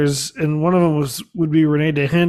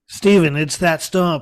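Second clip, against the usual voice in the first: put-on deep, nasal voice. Doing an impression of Ian arguing about a stump: Ian impression, nasally deep voice. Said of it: "I can't even do a good impression of Ian".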